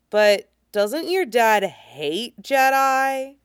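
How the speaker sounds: slow, distrustful, drawn-out suspicious delivery. Narrator reads a boy questioning another boy's invitation, suspicious. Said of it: "he asks suspiciously".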